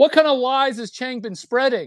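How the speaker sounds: mock baffled, very high-pitched shriek. Retelling what a confused man screamed again after being offered food, retelling a scream. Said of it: "he screams it again".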